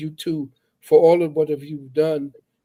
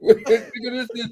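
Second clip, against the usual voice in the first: high, laughing, dismissive put-on voice. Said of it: "Then God turned and said".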